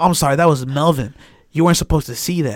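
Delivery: put-on talking while chuckling. Retelling the interviewee apologizing afterwards: imitating someone chuckling while talking. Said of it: "And then he starts chuckling".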